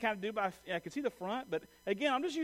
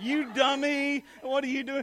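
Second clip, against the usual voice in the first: high, loud teasing jeer through laughter; 6 semitones higher, 7 dB louder than usual. Speaker retells a woman pointing at them, imitating someone laughing mockingly. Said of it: "She's like pointing and laughing".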